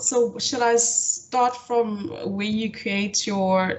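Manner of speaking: deliberately slowed, careful, measured pace. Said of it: "can you please slow down a bit?".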